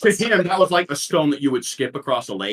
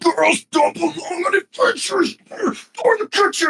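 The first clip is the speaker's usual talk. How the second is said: furious, very high-pitched troll yelling; 14 semitones higher than usual. Voicing an attacking troll insulting a player character: furious angry troll. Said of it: "he's super mad".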